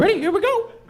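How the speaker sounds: perked-up, perky cartoon mouse voice. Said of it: "Eddie's voice keeps changing".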